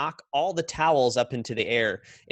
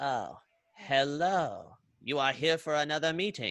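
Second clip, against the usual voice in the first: slow put-on alien creature voice, one word drawn out; 3 semitones higher, 4 dB quieter than usual. Voicing a frog-like receptionist creature greeting guests at the door: put-on receptionist creature voice. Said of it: "I just don't remember what voice I gave her last time".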